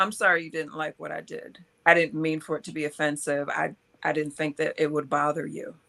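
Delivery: ordinary talk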